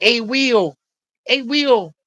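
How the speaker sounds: thin, high, squeaky little voice. Describing a man who greeted the speaker, imitating a high squeaky voice. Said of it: "had this really high, squeaky voice".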